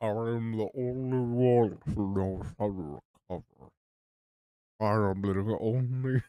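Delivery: low, deep, monstrous voice. A narrator voices the figure speaking from the screen, in a deep monster voice. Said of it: "I went from like the deep monster voice".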